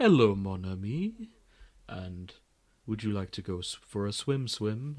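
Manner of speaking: put-on laid-back, relaxed French accent. Describing a favorite game character, quoting Esquie in a laid-back French voice. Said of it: "he talks in this laid back French voice".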